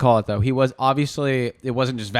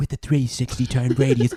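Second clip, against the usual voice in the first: put-on TV commercial voiceover voice. Describing a vacuum commercial: imitating the Dyson commercial voiceover. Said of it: "and then you hear".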